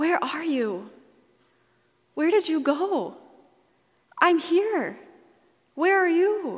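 mock heartbroken, sorrowful, sad, high voice. Retelling the scene, voicing God's question, retelling a sad question. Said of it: "You can feel the sadness in God's voice".

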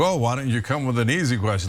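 ordinary talk

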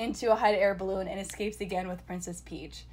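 plain

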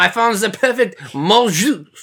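put-on slow, drawn-out Cajun accent.

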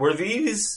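voice breaking and cracking very high. Starting to ask the others a question, voice cracking. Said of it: "my voice just cracked there".

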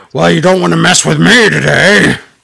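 put-on rough tough-guy hard-man voice. Retelling a wrestler's backstage line, imitating a fake tough voice. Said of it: "He does a fake voice to sound tough".

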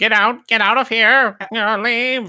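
side-of-the-mouth delivery. Imitating the annoying alien entity's repeated lines: talking out of side of mouth. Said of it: "talking out of the side of his mouth".

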